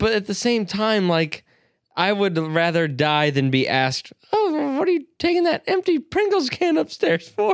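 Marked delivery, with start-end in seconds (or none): 4.3-7.5 very high-pitched voice. Retelling a question he dreaded being asked: imitating Mom's voice. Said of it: "That's Mom's voice".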